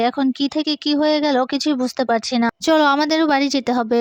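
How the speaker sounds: ordinary delivery, nothing marked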